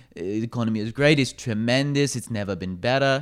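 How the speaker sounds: clumsy, bad put-on accent, faintly British. Talking about the economy, the speaker quotes Trump in a terrible Trump accent. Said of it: "That was a terrible Trump accent".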